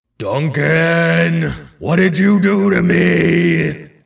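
booming, rough, godlike voice, drawn-out "me". A towering face peers down and addresses Duncan, [name]'s booming voice. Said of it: "his voice booms".

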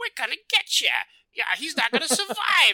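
very high, shrill, swooping cartoon bandit voice. Speaker imitates a game's bandits, who all have the same cartoon voices: cartoony bandit voice. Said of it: "they're all cartoon voices".

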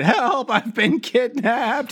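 screamed, very high-pitched. Recapping an episode, acting out a character crying for help: retelling Vaunt's scream. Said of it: "Vaunt screaming that".

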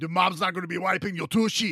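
stern drill-sergeant voice. Quoting a clip, said like a strict dad: imitating a strict father. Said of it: "Sounds exactly like my dad growing up".

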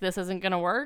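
ice-cold, flat delivery with no feeling. Retelling how someone dumped a date, imitating an icy tone. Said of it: "with ice".

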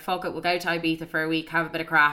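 ordinary delivery

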